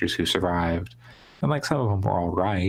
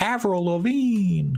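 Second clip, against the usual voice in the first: very high, slow, crazy Creole Southern yell. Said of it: "develops this crazy Creole Southern accent at one point and just yells out".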